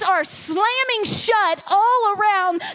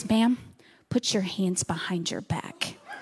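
low, soft whisper. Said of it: "she's just whispering to me".

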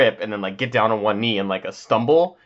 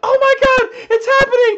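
mock excited girl screaming, higher, louder; 8 dB louder than usual. Imagining a prank where a girl thinks she's being proposed to: imitating a girl screaming. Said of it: "the girl just starts screaming".

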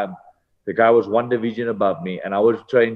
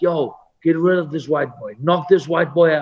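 put-on, high-pitched yelled hollering; 7 semitones higher than usual. Speaker retelling what was yelled at his sparring opponent through the first round, retelling a yell. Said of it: "Tyson was just yelling at his guy like".

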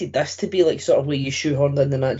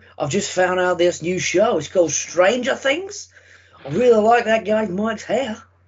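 put-on quasi Scottish-Australian blended accent; 6 semitones higher than usual. Co-hosts chatting about a haircut; one voices a quote in a quasi scottish australian accent. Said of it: "That quasi Scottish Australian accent".

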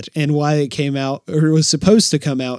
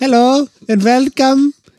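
put-on Eastern European accent, much higher, louder; 11 semitones higher, 6 dB louder than usual. Trying out an accent another speaker asked about, in a VeggieTales accent. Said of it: "I feel like it's from VeggieTales".

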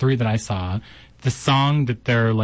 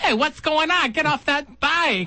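put-on fussy old woman screaming, higher. Imitating a fussy old woman from the show: imitating Barbara screaming. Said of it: "Oh, so much screaming".

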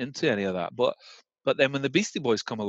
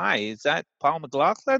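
imitated American accent; 4 semitones higher than usual. Retelling a phone call on a train: imitating an American accent. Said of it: "it was American accent".

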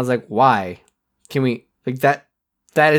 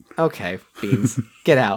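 usual speaking voice

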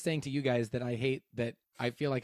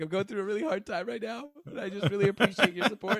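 put-on tearful crying voice; 7 semitones higher than usual. Describing a woman rubbing tears from her eyes: imitating someone crying. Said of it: "she was like crying".

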